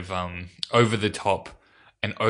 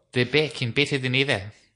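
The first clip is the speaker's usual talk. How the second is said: New Zealand accent; 5 semitones higher than usual. Speaker trying out accents, New Zealand accent. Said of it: "That was New Zealand".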